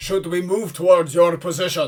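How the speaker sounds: loud, booming voice carrying across a distance. Game master voicing a voice that answers the players, booming back. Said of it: "the voice booms back".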